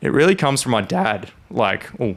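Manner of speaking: voice cracking. Guest asked where their passion for cars comes from, voice cracking. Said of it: "voice crack".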